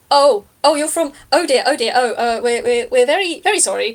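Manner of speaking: flustered, slightly panicky, stumbling stammer. Narrating to three players as the character hears the Jitterbug: Lady Lamplight, a bit panicked. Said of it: "there's a bit of panic in their voice".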